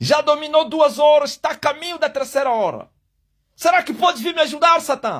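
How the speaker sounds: put-on desperate shouting. Acting out the sun shouting to Satan for help: acting out a desperate shout. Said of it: "o solo tá a gritar".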